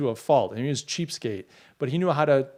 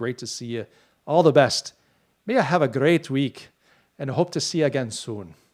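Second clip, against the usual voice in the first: very bad put-on Irish accent. Host reading chat, thanking a viewer from Ireland, in a bad Irish accent. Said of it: "my worst Irish accent".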